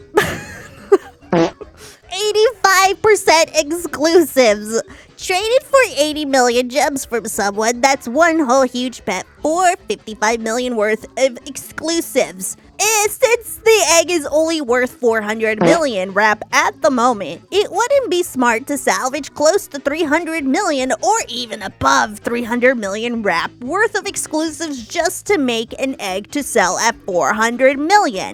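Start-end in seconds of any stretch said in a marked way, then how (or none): 2.2-28.4 nerdy, big-brain know-it-all voice. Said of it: "I'm gonna do the nerd voice".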